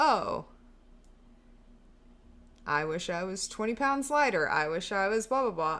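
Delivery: normal talking voice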